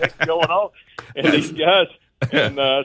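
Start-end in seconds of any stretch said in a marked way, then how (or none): 0.0-0.7 shouting voice, higher pitched. Retelling how he called out to passing runners at night: imitating his own yell. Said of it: "I yelled at one of them".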